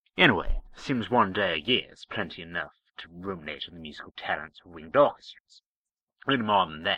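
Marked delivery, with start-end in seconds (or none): none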